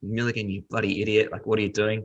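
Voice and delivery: put-on, contained screaming rant. Retelling a reaction to a foul while watching tv: imitating someone screaming at the tv. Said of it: "I was screaming at the T V".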